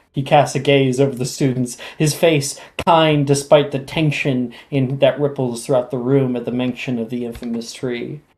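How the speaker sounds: plain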